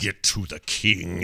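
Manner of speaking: jittery, shaky voice, very slow. Retelling a game cutscene line: imitating Nathanos's jittery shaky voice. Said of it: "in this very jittery, sort of shaky way".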